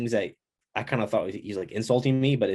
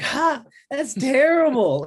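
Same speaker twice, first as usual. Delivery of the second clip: imitated mocking laugh, higher and louder; 6 dB louder than usual. Retelling how the coach reacts when a move fails: imitating the coach laughing at you. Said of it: "he'll laugh at you".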